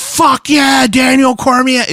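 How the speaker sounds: mock fan shout, high, loud and hyped.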